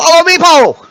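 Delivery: cheerful creature voice. Voicing Meepo as he leads the group off: happy Meepo voice. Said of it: "Meepo sounds very happy now".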